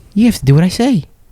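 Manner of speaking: crazed, menacing movie voice. Doing an impression of the movie Fear. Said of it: "That's my impression of the movie Fear".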